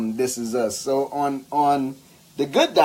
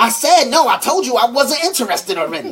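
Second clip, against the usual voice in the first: extra over-the-top delivery, high and loud. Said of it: "And then she was like".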